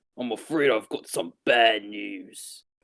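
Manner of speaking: slow, deliberate British-accented impression. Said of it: "And I want him to go".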